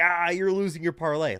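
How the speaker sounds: snide, taunting tone. Retelling a friend gloating over a losing bet: imitating a friend taunting. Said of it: "like a dick".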